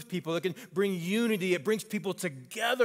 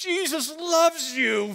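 put-on shrill, high, raised yell; 10 semitones higher, 5 dB louder than usual. Retelling what he shouted back at an aggressive driver: retelling his own yell. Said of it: "I yell out to him".

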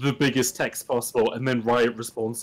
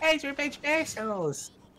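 put-on voice, squeaky and high-pitched; 4 dB quieter than usual. Joking around with friends mid-mission, shouting the line in a squeaky South Park voice. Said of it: "It's like you're fucking chipmunk".

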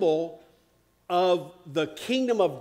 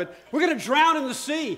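put-on panicked screaming, much higher, faster; 8 semitones higher than usual. Retelling the fishermen's cry when the sea turned bad, mock panicked screaming. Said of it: "And I'm screaming".

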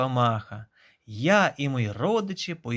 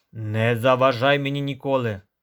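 said with an audible snort; 3 dB louder than usual. A bee, busy collecting honey, brushes off the caterpillar's plea, snorting. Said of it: "пирхнула бджола".

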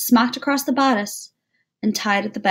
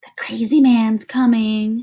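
drawn-out loud hissing; 5 dB louder than usual. A boy running past on the front steps of school hisses in the narrator's ear. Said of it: "he hissed in my ear".

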